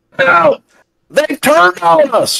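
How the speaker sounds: very high, rough, blood-curdling scream. A character sees confusion on a man's face and gives a blood-curdling scream for help. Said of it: "he unearths a blood-curdling call for help".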